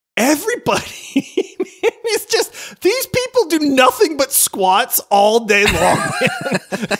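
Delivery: high, wheezing, laughing through the words.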